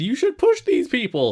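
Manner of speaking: insistent, pushy voice.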